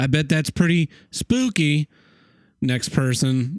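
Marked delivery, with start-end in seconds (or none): 0.0-1.9 slow, condescending, talking-down tone. Imitating Alex Trebek asking a contestant about their life: condescending Alex Trebek impression. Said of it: "It's like a real condescending tone about him".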